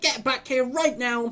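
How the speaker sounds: high, loud, shouted yelling. Retelling a character's line from an episode: imitating someone yelling. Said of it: "Are you yelling at the wind?".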